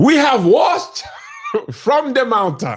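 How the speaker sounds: put-on West African accent, pitched very high. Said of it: "let's hear it".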